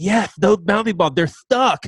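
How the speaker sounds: put-on child voice with a lisp. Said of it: "he has a little lisp".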